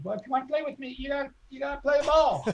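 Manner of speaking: high, beautiful put-on voice. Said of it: "in this really high, beautiful voice".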